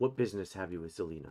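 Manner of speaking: low, hushed half-whisper. Voicing a guard asking about business with Zelina: low hushed half-whisper. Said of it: "in a low hush whisper".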